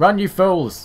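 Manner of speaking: loud, high-pitched yelling.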